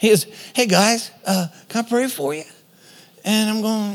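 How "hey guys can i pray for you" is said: gentle, mild, tender, kindly voice. Retelling how a pastor offered to pray for them: imitating Paul Bertig's gentle voice. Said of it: "gentlest person".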